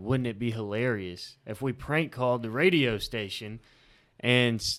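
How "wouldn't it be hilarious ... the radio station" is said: ordinary talk, nothing marked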